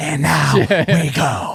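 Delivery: imitated creepy whisper. Retelling how a rival leaned in and whispered: imitating a Joker-like whisper. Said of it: "whisper in my ear like you're the fucking Joker".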